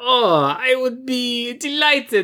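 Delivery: very slow, high, drawn-out cartoonish Italian accent. Retelling what Philippe said when invited to a party, imitating Philippe's Italian accent. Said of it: "guy's accent is Italian. He sounds like a fucking Super Mario brother".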